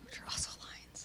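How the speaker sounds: hushed whisper. While an interviewer asks a guest about her tattoos, another guest chimes in, whispering. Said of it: "[[name] Whispering]".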